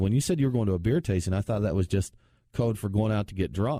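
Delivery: ordinary delivery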